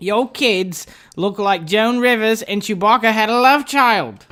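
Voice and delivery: slow, deliberate British accent. Reading a joke card aloud: British accent sounding like Harry Potter. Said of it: "That sounded like Harry Potter".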